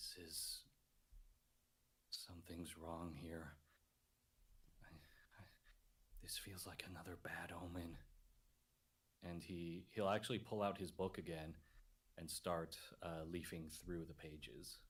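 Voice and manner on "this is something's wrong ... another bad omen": quiet whisper, lower and quieter. Voicing a character looking up at the misty mountain: whispering to himself. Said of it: "he kinda just whispers to himself".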